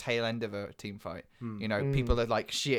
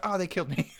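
high, put-on, defeated cry; 8 semitones higher than usual. Acting out a player after being killed: put-on in-game shout. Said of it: "And then you shout".

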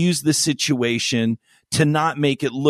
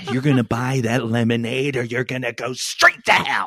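throaty put-on movie-star voice. Asked for a Jack Nicholson throat line, speaker does Jack Nicholson throat voice. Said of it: "that's a Bill Hader impersonation of Jack Nicholson".

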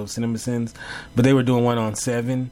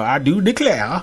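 cartoonish, laid-on, exaggerated Southern accent; 4 semitones higher, 4 dB louder than usual. Mocking a man's accent as not real, the speaker demonstrates: Foghorn Leghorn voice. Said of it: "more cartoonish Southern Froghorn Leghorn".

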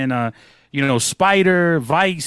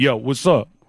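put-on annoyed, upset tone, lower; 3 semitones lower than usual. Retelling a phone call, imitating the other speaker's upset tone. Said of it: "you had this tone".

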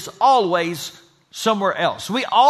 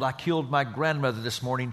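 soft, muttered, under-the-breath mumble; 8 semitones lower, 10 dB quieter than usual. Telling an anecdote about a president greeting a line of guests, acting out a mumble. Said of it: "Roosevelt mumbled".

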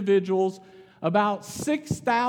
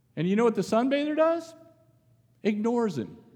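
ordinary talk, nothing marked

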